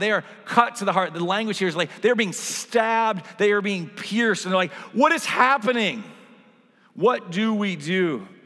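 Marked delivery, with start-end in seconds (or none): 4.9-8.2 urgent, swooping, drawn-out crying out. Speaker voices the crowd's question to Peter in a Bible passage, acting out an urgent cry. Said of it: "you need to hear the urgency in their voice".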